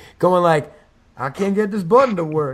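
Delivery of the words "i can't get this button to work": dopey idiot voice, totally defeated. Describing the listener fumbling with their pants, in a dopey idiot voice. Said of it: "why is that like a fucking idiot coming out of your mouth".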